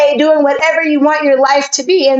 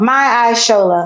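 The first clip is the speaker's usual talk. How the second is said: Shola with stress on the sho syllable; 4 semitones lower than usual. Answering where the accent falls in a name: stress on sho in shola. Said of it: "I'd say on the show".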